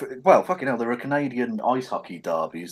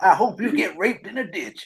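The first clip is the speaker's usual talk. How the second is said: fake American accent, pitched higher; 9 semitones higher than usual. Doing an impression of someone from Wisconsin, in a put-on American accent. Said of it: "I've got to do it in an American accent".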